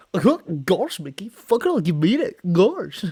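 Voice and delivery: high swooping cartoon voice. Imitating Goofy talking in the background: Goofy voice. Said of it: "You just hear Goofy in the back".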